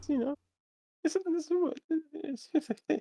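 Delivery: very high, stuttering stammer. Talking about a four-year relationship, the speaker's voice jumps up, stuttering. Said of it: "your voice went up an octave and you stuttered".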